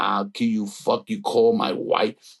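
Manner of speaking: acted furious rage. Retelling what he shouted on a legal call, retelling a furious outburst. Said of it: "I go fucking ballistic".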